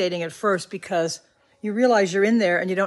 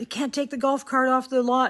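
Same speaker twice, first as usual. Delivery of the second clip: mock security guard voice, high hollering yell; 6 semitones higher than usual. Retelling what a security guard yelled at her: imitating a guard screaming. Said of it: "the security guard was screaming at her".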